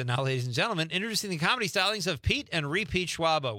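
high, showy stage announcer voice. Reading out someone's joke, in an MC announcer voice. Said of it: "in an MC voice".

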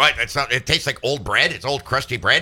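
normal talking voice

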